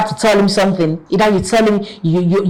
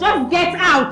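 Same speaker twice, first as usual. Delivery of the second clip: furious, very high-pitched angry yell; 10 semitones higher, 3 dB quieter than usual. Ordering an apologizing partner out of the house: shouting angrily. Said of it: "stop shouting".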